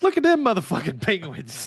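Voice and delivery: big, swooping, high nature documentary narrator voice. Joking about a voice narrating their lives in nature documentaries: Samuel L. Jackson voice. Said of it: "That's Sam Jackson".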